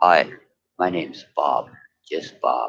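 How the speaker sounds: very low, faked, put-on deep voice. Retelling introducing herself on a panel to fool people: put-on deeper voice. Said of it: "I can do the deeper voice".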